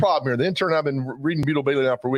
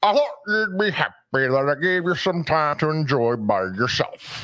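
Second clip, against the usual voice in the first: put-on evening news anchor voice. Reading a comic strip general's line aloud: Walter Cronkite voice. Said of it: "This is the General's Walter Cronkite".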